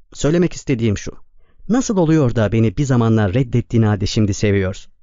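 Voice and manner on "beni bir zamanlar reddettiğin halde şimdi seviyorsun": ordinary delivery, nothing marked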